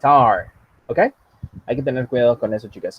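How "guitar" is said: guitar stressed on second syllable, -tar. Teaching English pronunciation, stress on second syllable of guitar. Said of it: "la palabra guitar tiene su sílaba tónica en el R".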